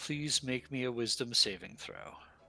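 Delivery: hushed, soft stage whisper in character. Voicing a character who leans in to a player's ear: half-whispering in character. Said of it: "lean in and whisper in your ear".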